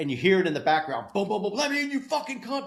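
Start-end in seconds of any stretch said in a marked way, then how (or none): 1.5-2.7 acted very high, shrill yelling. Retelling a home invasion heard in the background: imitating someone yelling. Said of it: "like, yelling".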